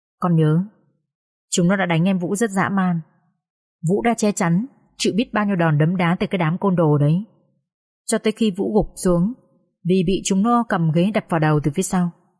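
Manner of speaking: ordinary delivery, nothing marked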